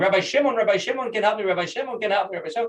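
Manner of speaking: high, possessed mock screaming. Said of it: "she's screaming".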